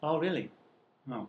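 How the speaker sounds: deflated, let-down, disappointed reaction. Reacting to hearing another speaker's star sign: disappointed. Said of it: "You sound disappointed".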